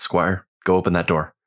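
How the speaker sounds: hushed whispered voice. A player's character calls to squire to go open a door, whispering. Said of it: "whisper out".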